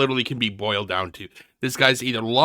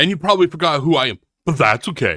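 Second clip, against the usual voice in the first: acted, loud, resentful tone with bitterness showing; 3 semitones higher, 5 dB louder than usual. Mocking a man in a video by repeating his words: imitating a bitter tone. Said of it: "the bitterness in his voice".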